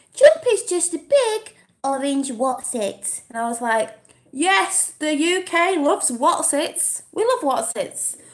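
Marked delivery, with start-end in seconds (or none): 0.2-3.2 put-on, sing-song, babyish voice. Quoting a funny online comment: baby voice. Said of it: "I'm going to do the baby voice".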